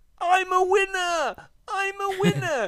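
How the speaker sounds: thick, put-on Japanese accent, very high shout. Describing racers who flew over for the event, retelling their shout in a heavy Japanese accent. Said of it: "but with a heavy Japanese accent".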